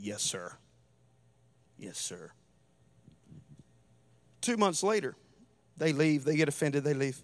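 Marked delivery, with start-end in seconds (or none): 0.0-2.3 mock through clenched teeth, very low, very quiet. Retelling how he answered after being told to cut it off, retelling gritted-teeth reply. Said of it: "through gritted teeth".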